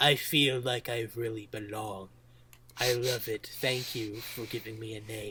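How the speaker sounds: soft, mock sly, scheming villain tone. Describing a character being inducted into the railway; very devious voice. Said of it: "he's got this very devious voice saying".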